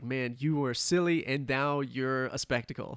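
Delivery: normal talking voice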